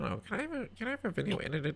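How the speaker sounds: full put-on nerd voice, very high, swooping. Mimicking clients' messages asking for videos edited, nerd voice. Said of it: "I almost did a nerd voice there".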